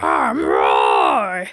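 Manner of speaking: put-on monster character voice. Describing a monster turtle character's voice, the speaker does Butch's voice impression. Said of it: "His voice in the thing is very like".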